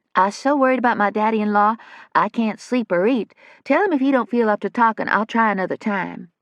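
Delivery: put-on high-pitched womanly voice. A character posing as a woman to a receptionist, in a high-pitched soft voice. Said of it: "Possum had a high-pitched, soft voice that could easily pass for a woman's".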